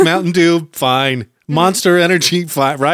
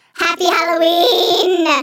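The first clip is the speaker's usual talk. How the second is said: very high, eerie, creepy goblin voice; 12 semitones higher than usual. Co-host gives the halloween greeting when asked to: creepy goblin voice. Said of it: "You sounded like a goblin".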